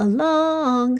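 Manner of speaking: stress on long. Explaining word stress with the word along: stress on long in along. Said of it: "Do you hear how that lasted for longer when I said it?".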